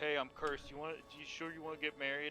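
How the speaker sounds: mock dry, flat, expressionless deadpan delivery. Retelling an emotional scene where Connor spoke: imitating Connor's deadpan delivery. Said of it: "Connor just deadpan said".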